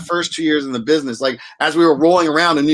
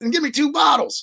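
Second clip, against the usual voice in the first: put-on very high-pitched Texan accent, way up high; 11 semitones higher than usual. Retell Tommy Lee Jones's answer about the wine in the store, in Tommy Lee Jones's Texas accent. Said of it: "And his Texas accent".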